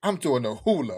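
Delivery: acted, solemn, totally earnest, dead serious tone. Retelling a friend's line, imitating someone dead serious. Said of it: "he was so serious".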